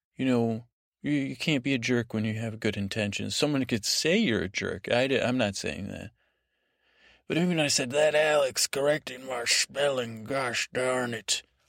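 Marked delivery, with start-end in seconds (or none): 8.2-11.4 somewhat pirate-like put-on voice. Addressing alex about correcting the spelling, in a piratey voice. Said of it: "pirate, but piratey voice".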